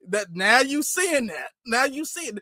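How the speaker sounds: ordinary delivery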